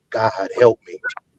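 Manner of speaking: hushed half-whisper under the breath. Retelling lying with a gun to the head: retelling own half-whisper. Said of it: "I just whispered".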